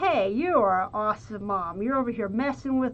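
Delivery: ordinary delivery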